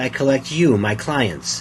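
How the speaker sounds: ordinary talk, nothing marked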